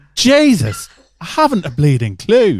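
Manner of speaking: very slow, loud, off-key, swooping fake Irish accent. Doing an accent he admits is offensive: put-on Irish accent. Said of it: "I'm gonna do the accent".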